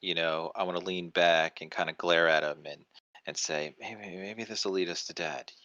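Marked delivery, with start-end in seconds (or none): 3.8-5.4 quiet, muttered under breath. Leaning back and glaring at another person, muttered under breath. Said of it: "Like under my breath".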